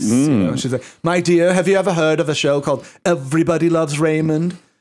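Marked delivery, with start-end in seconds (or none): 1.0-4.6 stagey, theatrical Broadway actor voice. Retelling what Doris Roberts said to the speaker's mother, doing a Doris Roberts impression. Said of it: "had a Broadway actor's voice".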